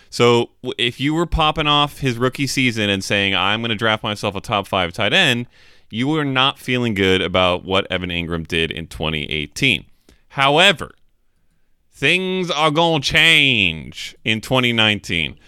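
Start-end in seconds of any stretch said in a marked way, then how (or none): 10.2-15.2 put-on American southern accent. Wrapping up talk about a tight end's coming season, in a southern accent. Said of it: "Was that a southern accent".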